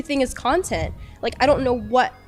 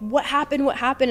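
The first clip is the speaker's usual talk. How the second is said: mock yell, much higher in pitch; 4 semitones higher than usual. Recalling a traumatic moment, the speaker retells Jack yelling at them. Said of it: "yelling at me".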